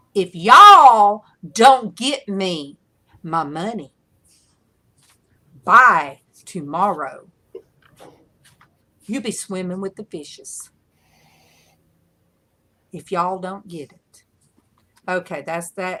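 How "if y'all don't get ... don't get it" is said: very loud put-on Southern accent. Threatening over money as a mock enforcer, put-on southern enforcer accent. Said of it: "I think that's what a southern enforcer would sound like".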